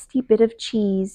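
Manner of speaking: plain reading voice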